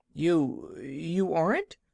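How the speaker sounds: faltering, halting, stammering, dismayed disbelief. Reading a story aloud, a little girl answering: stammering in dismay. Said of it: "stammered the little girl in plain dismay".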